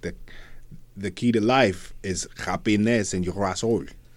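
put-on French-Canadian accent speaking English. Retelling a movie scene where characters talk in a canadian french accent. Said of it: "they're talking in a Canadian French accent".

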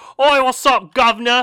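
shrill, very high, full-volume cartoon character voice. Acting out a scene of Paddington walking in: Paddington voice. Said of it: "that's not how Paddington talks".

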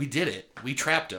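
usual speaking voice

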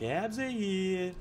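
very high put-on reality-TV party voice. Between topics, breaking into a quick bit in a Jersey Shore voice. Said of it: "It's my Jersey Shore voice".

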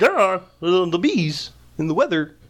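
put-on frog puppet character voice. Showing how a Seinfeld joke should have gone, in a Kermit the Frog voice. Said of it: "Kermit the Frog".

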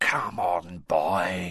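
hushed whispering. Narrator reads a man prompting a boy who looks at him blankly; whispered. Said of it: "whispered Moody".

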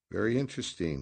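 calm, composed. Captain Quarterblad replies after Redrick throws money at his feet: calm. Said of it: "Captain Quarterblad said calmly".

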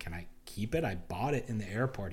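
ordinary delivery

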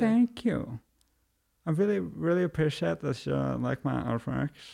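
put-on official, grateful tone through closed teeth. Demonstrating how an artist should respond to praise, official grateful voice. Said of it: "The official grateful voice".

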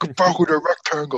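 high, screamed voice. Retelling screaming at an outfielder from the stands: imitating own screaming. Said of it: "My mouth was huge".

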